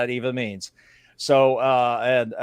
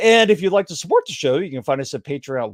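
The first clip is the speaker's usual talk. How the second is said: voice cracking; 4 semitones higher than usual. Podcast host reading the show's support plug, voice cracking. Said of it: "my voice cracked there".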